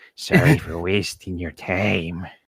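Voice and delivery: put-on eerie creepy-girl voice, very low and hushed. Voicing a creepy character in a group roleplay, creepy voice. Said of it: "Do I give her a creepy voice then?".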